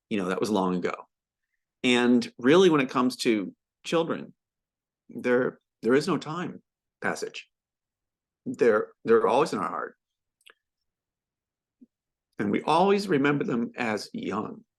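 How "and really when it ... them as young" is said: heartfelt, moved, emotional, slightly raised voice. Before a moment of remembrance for the children on Maui, speaking emotionally. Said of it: "very emotional for me".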